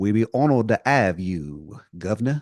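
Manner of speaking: slow, really bad English accent. Retelling what a man said to the governor over the phone: terrible English accent. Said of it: "He's got a really terrible English accent".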